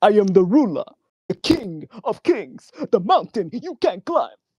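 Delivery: very high, loud, overcommitted, botched Nigerian accent. Trying to commit to a Nigerian accent, it ends up sounding like Count Chocula. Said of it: "now I'm sounding like fucking what you call it, Count Chocula".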